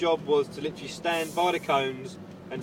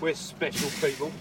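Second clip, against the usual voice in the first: usual speaking voice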